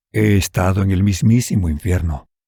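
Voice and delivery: plain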